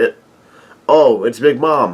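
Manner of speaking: ordinary delivery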